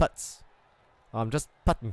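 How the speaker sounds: terrible put-on South African accent. Show how he says "pits", in a terrible south african accent. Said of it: "impression of a South African accent".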